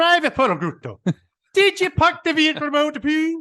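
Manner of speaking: very high, loud put-on Scottish sergeant voice. Telling an army story, imitating Staff Sergeant Raymond Taylor. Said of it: "I think it was Scottish".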